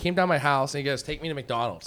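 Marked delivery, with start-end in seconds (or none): 1.0-1.9 put-on soft, bratty, annoying little-kid voice. Retelling a fourteen-year-old neighborhood kid demanding a ride: imitating an annoying little kid. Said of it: "like, an annoying little kid".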